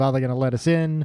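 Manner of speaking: ordinary talk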